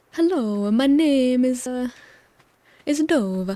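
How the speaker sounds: very slow fake Italian accent, a-endings tacked on. Demonstrating the Italian accent that adds an A to everything: put-on Italian accent. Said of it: "the Italian accent where you add an A to the end of everything, like".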